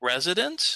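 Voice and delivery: "residence" said with a rising tune. Showing how to ask about a word you don't understand, rising pitch on 'residence'. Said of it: "do you see how my voice goes up? Like it's a question?".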